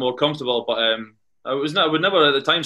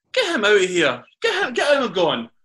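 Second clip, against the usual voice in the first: mock shouting, high and swooping; 7 semitones higher than usual. Retelling how the manager shouted to have a player removed: imitating Alan Kernahan shouting. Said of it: "I remember him shouting".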